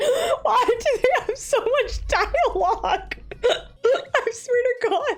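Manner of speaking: very high, helpless giggling through the words. Complaining about a game's heavy dialogue, laughing while talking. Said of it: "I can't stop laughing".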